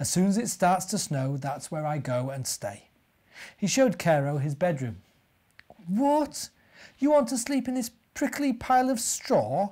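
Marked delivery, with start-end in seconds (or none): 5.9-9.7 crying out in horror. Cairo, shown the bear's straw bed, reacts: horrified cry. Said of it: "Cried Cairo, horrified".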